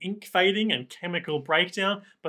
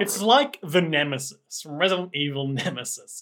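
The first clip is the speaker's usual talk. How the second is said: usual speaking voice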